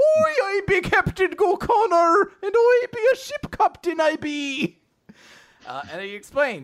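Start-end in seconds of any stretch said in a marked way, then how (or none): 0.0-4.8 put-on very high, loud, laid-on stock Irish accent. Narrator introducing a sea captain character, stereotypical Irish guy voice. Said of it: "I want him to be like a stereotypical Irish guy".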